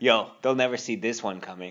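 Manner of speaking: normal talking voice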